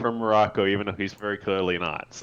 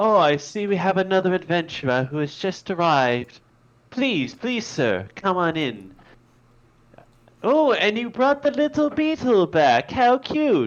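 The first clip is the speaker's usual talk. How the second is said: put-on very high, welcoming young lady's voice; 10 semitones higher, 4 dB louder than usual. Narrator voicing a young lady greeting an adventurer at the door: young lady's voice. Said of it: "you can see a young lady is inside".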